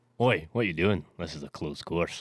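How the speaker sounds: put-on deep, loud, booming shout in a Scottish accent. Retelling what he said when caught sneaking onto the sixteenth green, in a scottish accent. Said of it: "He's got a Scottish accent".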